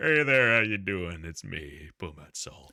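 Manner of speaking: big fantasy-creature character voice. Retelling what Caleb hears while looking for something, in a Pumat Sol impression. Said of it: "great impression".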